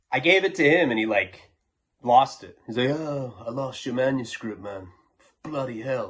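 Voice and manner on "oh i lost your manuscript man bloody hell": put-on British accent. Retelling how a friend said he lost the manuscript: imitating Leo's British accent. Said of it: "He has, like, a British accent".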